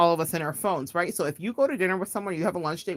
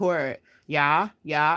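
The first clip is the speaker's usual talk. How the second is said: flat, utterly uninterested, banal bored monotone. Retelling a parody of sisters scrolling their phones: imitating a banal monotone Kardashian parody. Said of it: "banal as possible with a monotone voice".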